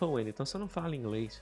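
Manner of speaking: fast, soft skeptical voice.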